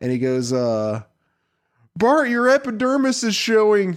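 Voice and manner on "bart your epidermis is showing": mocking, teasing schoolyard jeer voice. Retelling a Simpsons quote, making fun of Bart: mocking Nelson voice. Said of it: "in typical Nelson fashion".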